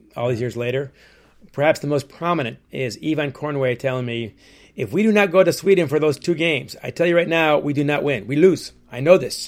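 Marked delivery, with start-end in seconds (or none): 4.7-9.5 very bad, clumsy, put-on French-Canadian Québécois accent. Recounting what Yvan Cournoyer told him years later, bad French-Canadian accent. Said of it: "that's my very bad French-Canadian accent".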